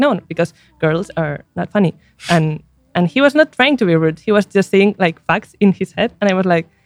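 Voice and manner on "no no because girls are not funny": usual speaking voice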